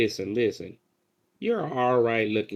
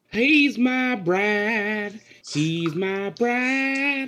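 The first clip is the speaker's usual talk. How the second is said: very high shouting yell with bride drawn out long; 10 semitones higher than usual. Player character walking through an empty church, yelling. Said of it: "I'm yelling out".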